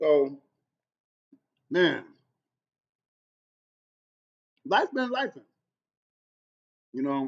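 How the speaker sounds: speaking with mouth full of food. A food seller chatting while eating, talking with mouth full. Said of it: "I hate talking with food in my mouth".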